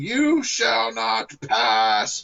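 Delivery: very high, very slow, drawn-out swooping shout. Joking about a goat grabbed by the horns: imitating a shout. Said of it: "And he'd start shouting".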